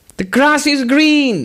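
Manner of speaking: put-on very high-pitched, old-school monk voice. Retelling what a monk said to young monks, in a high-pitched voice. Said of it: "he with this high-pitched voice".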